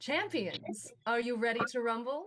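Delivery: echoing arena announcer call, ringing out. Voicing the dungeon mistress calling to the champions: Lady Destiny voice. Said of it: "you hear her voice echoing magically, uh, enhanced across the arena as she says".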